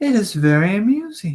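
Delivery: high, ladylike, feminine robot voice. Reading a story aloud, voicing a character in a feminine robot voice. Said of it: "trying to do like a feminine robot laugh".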